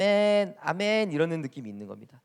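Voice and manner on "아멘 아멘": put-on cute, nasal Thai accent. Imitating how Thai people say amen: high nasal Thai-accented amen. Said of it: "약간 이렇게 코맹맹이 소리 비슷하게 나면서 약간 톤이 높아요. 귀여운 느낌이 약간 있어요".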